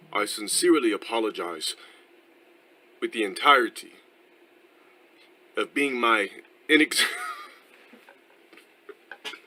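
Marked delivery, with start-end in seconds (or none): 0.1-7.0 clumsy, villain-like put-on British accent. Speaker tries a voice he then admits isn't british: bad fake british accent. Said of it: "That's not British, I know".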